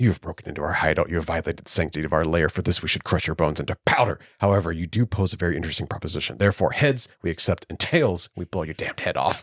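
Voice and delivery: put-on whispered villain voice. Retelling Two-Face threatening the Riddler: imitating Two-Face whispering. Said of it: "whispering into his face".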